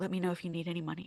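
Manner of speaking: very quiet, hushed voice, barely above a murmur. Retelling what the speaker's mom said after figuring things out, quoting mom very quietly. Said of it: "very quietly".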